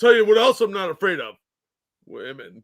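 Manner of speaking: blustering, macho, boastful tough-talk voice. Mocking how the man in the video said his line: imitating the man in the video. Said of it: "And the way he said it".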